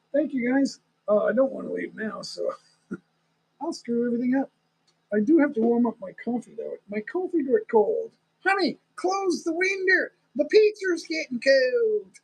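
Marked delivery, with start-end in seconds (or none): 8.4-12.0 high-pitched put-on Texas accent. Demonstrating the texas accent some female cousins have, texas accent. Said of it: "That's my Texas accent".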